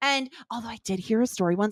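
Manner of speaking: hushed half-whisper, under the breath. Speaker starting a story about their brother, half-whispering. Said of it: "I don't know why I'm whispering".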